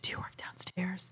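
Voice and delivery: very quiet, hushed, breathy whisper. Retelling what the woman at the dentist's front desk asked: imitating a whisper. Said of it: "she whispered to me".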